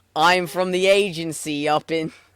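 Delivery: put-on Boston accent. Quoting the detective from the Awakened demo, in a put-on Boston accent. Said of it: "Boston accent of the like I'm from the detective".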